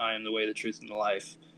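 ordinary talk

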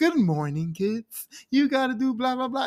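put-on high, sing-song kids' show host voice.

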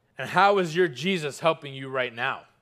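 sneering voice. Speaker retelling an abusive husband's words to his wife: retelling a sneer. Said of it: "he sneered".

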